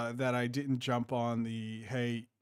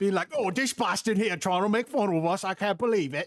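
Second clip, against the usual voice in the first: loud, high-pitched put-on Cockney English accent; 8 semitones higher, 8 dB louder than usual. Voicing Cockney English people reacting to an imitation of them, in a Cockney English accent. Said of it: "a Cockney English accent".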